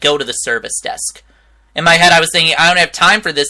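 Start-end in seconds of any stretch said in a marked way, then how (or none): 0.0-1.2 toneless, hushed, breathy deadpan. Retelling the answer the speaker gave a confused customer, retelling a flat tone. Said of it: "I just said it in a flat tone like that".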